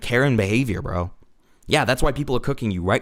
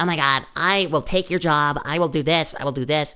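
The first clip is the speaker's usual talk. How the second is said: mock woman's voice, higher pitched; 4 semitones higher than usual. Mocking a woman in body cam footage who threatens officers: imitating a woman threatening police.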